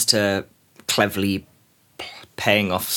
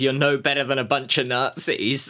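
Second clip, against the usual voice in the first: normal talking voice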